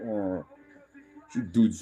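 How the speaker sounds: put-on grunting dog voice. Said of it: "she kinda gets her little grunts in and be like".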